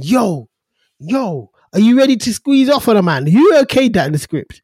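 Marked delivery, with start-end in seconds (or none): 0.0-3.3 mild half-shout, kept light. Retelling a tv scene where someone hands over a gun: imitating someone shouting. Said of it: "now you're shouting at him saying".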